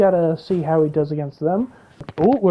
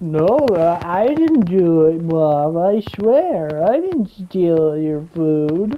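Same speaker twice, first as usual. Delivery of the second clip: very slow, drawn-out guilty puppy voice; 2 semitones lower than usual. Voicing a game animal that looks like a puppy caught stealing food: voicing a guilty puppy. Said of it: "just looked like a puppy who was like".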